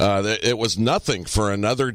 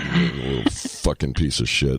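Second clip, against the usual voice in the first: menacing mobster delivery, lower; 7 semitones lower than usual. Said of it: "with my Tony Soprano look on my face".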